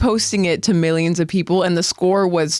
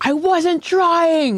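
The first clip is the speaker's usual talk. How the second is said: high-pitched yelling; 10 semitones higher than usual.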